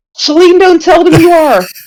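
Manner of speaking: mock high shout at the top of the lungs. Retelling how Ryan shouted in the scene: imitating Ryan shouting. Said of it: "he shouts".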